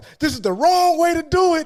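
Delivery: high, loud, mocking call-out tone.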